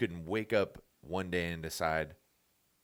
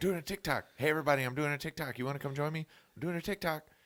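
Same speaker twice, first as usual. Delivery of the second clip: very high, repeated announcer-style voice; 9 semitones higher than usual. Imitating Kevin Hart making TikToks: Kevin Hart impression. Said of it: "Have you seen Kevin Hart on there?".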